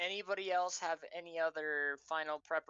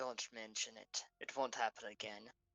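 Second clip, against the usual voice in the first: quiet, hushed half-whisper; 6 semitones lower, 6 dB quieter than usual. A game master voices a character half-whispering back while walking away: half-whispering. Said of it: "He whispers back".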